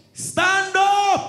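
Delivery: shouting at full volume. Coaching someone to order Pastor Joshua to stand up: very loud. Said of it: "Say it very loud".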